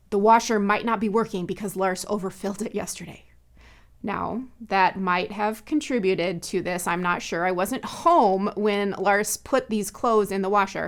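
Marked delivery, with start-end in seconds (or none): 0.1-3.2 mock blaming, accusatory, parent-like reproachful tone. Retelling a remark to a husband about a broken washer: imitating own accusatory parental tone. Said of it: "parental accusatory tone in my voice".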